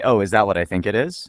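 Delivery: normal talking voice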